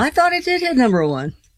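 "thought" stressed, lifted high and wide.

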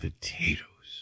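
stunned, slow, whispered disbelief.

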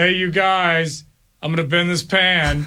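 put-on unenthusiastic, flat, half-hearted, zero-energy delivery. Retelling a listener's half-hearted dressed-up performance: imitating an unenthusiastic Sloth. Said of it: "his sloth was so unenthusiastic".

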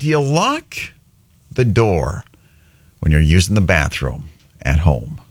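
very slow, halting, drawn-out, broken-up phrasing. Radio host puts a question to listeners before a game, very slow. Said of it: "I had to say it so slow".

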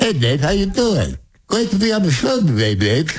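high, bouncy, swooping cartoon voice. Trying out a cartoon voice on Dave's show, a Porky Pig attempt more like Elmer Fudd. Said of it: "It's more like Elmer Fudd".

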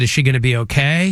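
normal talking voice

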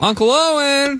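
loud, ringing call-out pitched way up. Calling out for an uncle in the middle of the desert: calling out loudly. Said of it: "are you calling to them right now".

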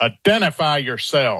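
grave, serious, no-nonsense tone. Retelling how the father called out into the darkness: imitating a deep booming voice. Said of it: "he has this very deep, booming voice when he's serious".

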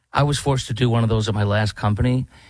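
plain

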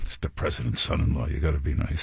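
acted whispering. Acting out an aide to Netanyahu, imitating someone whispering. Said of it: "the guy's whispering to him".

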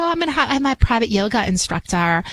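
high, sweet, lilting princess voice.

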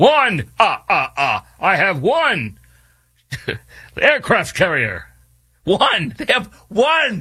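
stretched out, pitch swooping up and down. Mocking a country with one aircraft carrier, the Count from Sesame Street voice. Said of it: "It's like the Count from, uh, Sesame Street".

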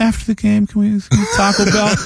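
put-on barely intelligible, high, mumbled small-child voice. Retelling a video of a kid asking his mom for Taco Bell: imitating a kid mumbling. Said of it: "you could barely make out the words".

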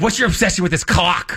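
curt, sharp, snapping delivery. Retelling how she answered about the clock: imitating her snapping. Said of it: "So she snaps at me like that".

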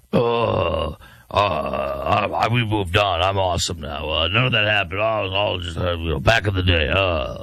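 low, mocking put-on voice. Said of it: "Here's Graham Plattner".

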